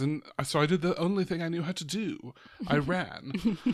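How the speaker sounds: put-on haughty British accent. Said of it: "her haughty British accent in this".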